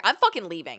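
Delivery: mock voice lifted into a yell. Retelling an argument with her, imitating own yelling. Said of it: "And so I raised my voice".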